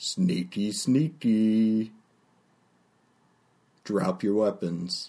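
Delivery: big, brutish, slow, hulking half-ogre voice. Voicing a big half-ogre, half-orc who catches a player: half-ogre half-orc character voice. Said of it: "half ogre, half orc. And he says".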